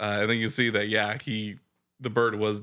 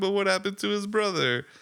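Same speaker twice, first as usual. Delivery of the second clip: mock very high, tearful, crying little kid voice; 10 semitones higher than usual. Retelling how a kid pointed out a magic trick: imitating a crying kid. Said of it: "he's crying".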